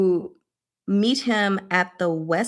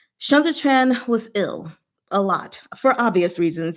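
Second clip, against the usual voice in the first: plain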